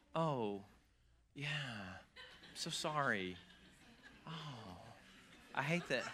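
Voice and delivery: exaggerated calm whisper, very slow. Retelling how they spoke to someone upset, mock over-dramatically calm. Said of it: "over-dramatically calm".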